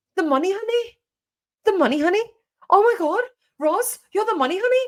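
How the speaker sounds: attempted Birmingham accent, very high-pitched. Retelling what Jojo once said, the speaker tries Jojo's Birmingham accent. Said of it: "I want to try and do her accent".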